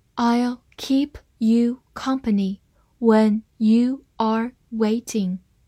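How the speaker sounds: slow, careful read-aloud delivery.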